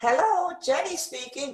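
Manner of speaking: terrible put-on woman's voice, pitched very high. In a lesson's phone role-play, the teacher answers as Jenny, terrible woman's voice. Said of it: "That's a terrible woman's voice".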